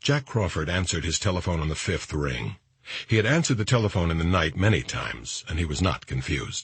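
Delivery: ordinary delivery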